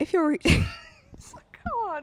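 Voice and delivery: talking through laughter. Restarting a recording take, laughing while talking. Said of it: "I just can't stop fucking laughing".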